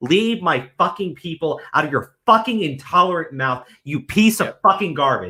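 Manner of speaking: enraged, furious, very angry outburst. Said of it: "sorry for getting very angry there".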